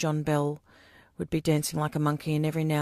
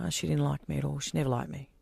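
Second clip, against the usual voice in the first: ordinary delivery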